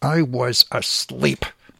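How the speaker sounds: fake speech through clenched teeth. Retelling his partner's words after a phone call woke her: speech through gritted teeth. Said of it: "said to me through gritted teeth".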